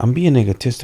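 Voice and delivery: plain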